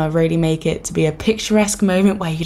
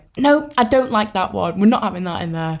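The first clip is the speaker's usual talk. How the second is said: ordinary talk, nothing marked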